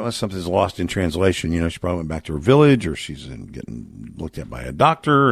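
usual speaking voice

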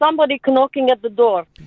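imitated Eastern European accent. Asked to do the accent again, speaker repeats the line in mother's ukrainian accent. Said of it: "Do the accent again".

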